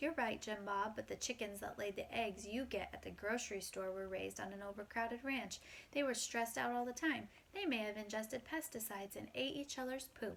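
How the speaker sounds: ordinary delivery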